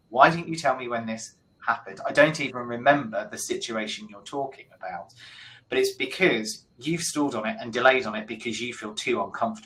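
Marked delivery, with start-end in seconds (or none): none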